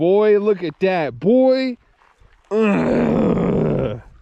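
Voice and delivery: thrilled, gushing, excited, swooping exclamations. Filming a walleye just caught, the speaker reacts, excited. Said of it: "I'm so excited".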